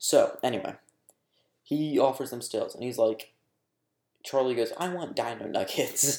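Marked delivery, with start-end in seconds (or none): 4.8-6.2 acted, slow, genuinely mad childish tone, no crying. Retelling a demand for dino nuggets: imitating someone actually mad. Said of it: "not crying, like, actually mad".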